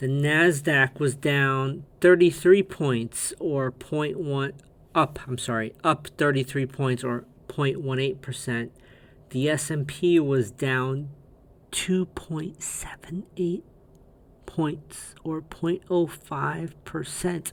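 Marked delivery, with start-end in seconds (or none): 11.7-17.5 hushed, barely voiced whisper. Reading out the day's stock index figures on a slow market day; whispering. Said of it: "I'm whispering".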